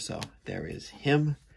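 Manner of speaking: ordinary talk, nothing marked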